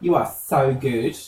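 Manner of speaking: plain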